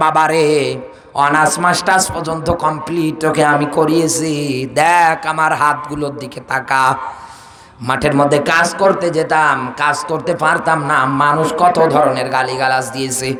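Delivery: normal talking voice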